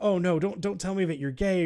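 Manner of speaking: mock fearful, frightened voice. Retelling a game scene where a mother on the phone fears her son's answer: imitating a fearful mother. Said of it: "she says, like, in fear".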